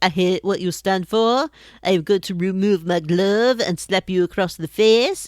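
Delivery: put-on Norwegian accent. During a game, a player speaks as a character, in a Norwegian accent. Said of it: "I'm doing a Norwegian accent".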